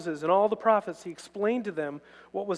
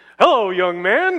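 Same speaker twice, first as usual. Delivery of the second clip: rich voice, louder and slower; 10 dB louder than usual. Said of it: "He had a rich voice".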